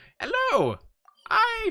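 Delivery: put-on very high old man voice, swooping and swinging around. Guessing aloud how the character sounds, after chat mentions her old man voice: trying Master Roshi's voice. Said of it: "Do they sound something like this?".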